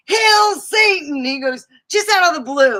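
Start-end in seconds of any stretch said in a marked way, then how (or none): 0.1-1.2 put-on sudden, very high, shrill little-old-lady yell. Retelling what a little old lady at the store yelled while leaving: imitating a yell. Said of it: "she yells".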